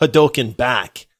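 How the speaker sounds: ordinary delivery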